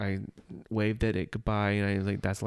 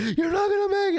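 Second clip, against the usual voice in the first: very high-pitched, loud, frantic, panicked freaking out; 6 dB louder than usual. Describing a video idea about Doctor Seeker in the control room: imitating Doctor Seeker freaking out. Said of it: "freaking out".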